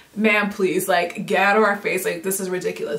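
ordinary talk

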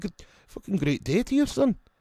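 put-on Scottish accent, pitched very high. Giving a shout-out to someone in scotland, in a put-on scottish accent. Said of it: "this Scottish accent that I do".

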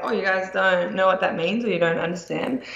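normal talking voice

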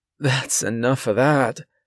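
aghast, horrified voice cutting in abruptly. A woman rushes to stop a record player after hearing it, horrified. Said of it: "she said, horrified".

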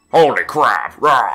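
put-on video game villain voice. Trying out game character voices for another player: Wario voice. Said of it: "sounded more like Wario than Strong Bad".

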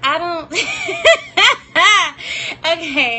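nervous laughing.

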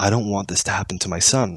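imitated whispering. Retelling what an interviewed man said when he leaned in: imitating someone whispering. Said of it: "he looks at me and he whispers".

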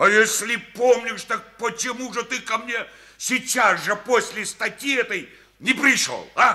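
very loud, very high, furious angry yelling. Party organization secretary confronting a comrade, shouting. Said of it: "Ты не кричи на меня".

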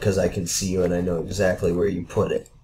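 low, flat, sarcastic deadpan.

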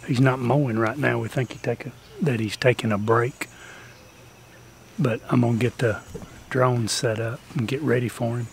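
speaking quietly. Hiding behind trees, waiting to surprise someone mowing, talking low. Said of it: "I'm kinda talking low".

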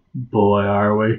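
low, gravelly, downcast, sad voice. A co-host announces they are reviewing Suicide Squad: gravelly sad voice. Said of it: "I can hear the gravelly sadness in your voice".

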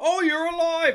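put-on Australian accent. Retelling a scene from a film: Australian accent.

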